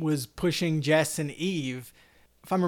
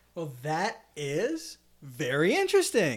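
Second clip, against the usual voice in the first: sarcastic, swooping sing-song; 3 dB quieter than usual. After explaining the word Blighty, the host reacts: sarcastic tone. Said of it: "that sounded really sarcastic".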